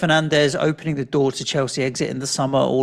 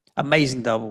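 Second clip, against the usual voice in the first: plain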